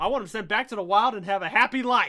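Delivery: loud, botched, really bad fake Australian accent. Quoting a man listing demands over an alligator, bad australian accent impression. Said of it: "really bad like accent impression of Australian".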